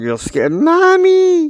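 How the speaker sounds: put-on scared, high, loud child's cry.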